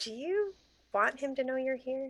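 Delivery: soft half-whisper, slightly high. Player's character half-whispers to Hana as he walks toward them, half-whispering. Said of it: "I'm gonna whisper to Anna".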